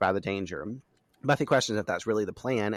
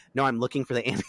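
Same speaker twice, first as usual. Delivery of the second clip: put-on quick, snarky, sarcastic delivery; 3 semitones higher than usual. Retelling a character's reply when caught hiding: imitating quick sarcasm. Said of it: "quick sarcasm".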